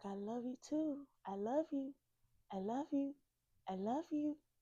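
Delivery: tearful crying. Recalling a farewell with her, the speaker retells a tearful goodbye. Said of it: "we're crying the whole time we're saying it".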